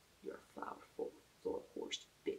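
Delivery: soft, unvoiced, mock teasing whisper.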